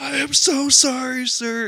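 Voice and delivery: play-acted very high, very slow, drawn-out weepy wail. Retelling a tearful assistant manager apologizing at the window, imitating someone bawling. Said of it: "he's just like bawling".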